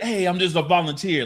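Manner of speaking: put-on New York accent. Quoting a line Tom Holland said: Tom Holland's New York accent. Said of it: "his New York accent right there".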